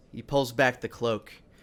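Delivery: ordinary delivery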